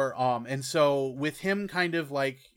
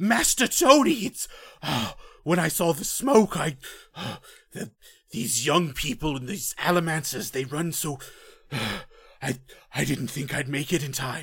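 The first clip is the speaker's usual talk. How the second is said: panting character voice, louder; 4 dB louder than usual. A storyteller voices Wittens bursting through the door, Wittens panting out of breath. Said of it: "panting quite out of breath and breathing quite heavily".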